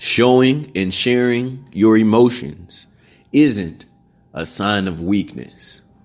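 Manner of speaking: very slow, deliberate, halting, broken phrasing. Asked to repeat it for the camera, a speaker says it real slow. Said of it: "let's say that real slow into".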